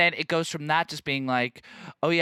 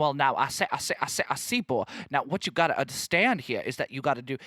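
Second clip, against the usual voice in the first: put-on full old-school Southern American accent. Explaining the Looney Tunes giant chicken to listeners, doing a Foghorn Leghorn impression. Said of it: "real like old school Southern accent".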